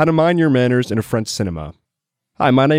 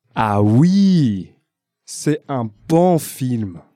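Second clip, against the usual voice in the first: slower, unhurried oui, stretched and drawn out. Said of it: "a little more slowly".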